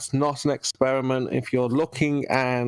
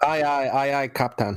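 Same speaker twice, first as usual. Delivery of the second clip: Scottish-accented voice. Asked by the other speaker to say a line in Scottish, Scottish accent. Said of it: "in Scottish?".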